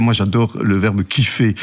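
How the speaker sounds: plain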